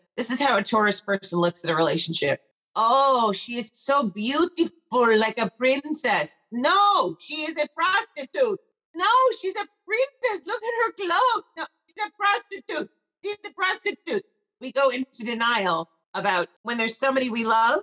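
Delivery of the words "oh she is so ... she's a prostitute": deliberately bad put-on Israeli teacher voice. Retelling what a teacher from Israel said, terrible impression of a teacher from Israel. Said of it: "I will do a terrible impression".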